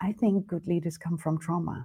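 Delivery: barely audible, very soft half-whisper. Sharing something the speaker says they're not allowed to say, half-whispering. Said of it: "I'll say it very whispering".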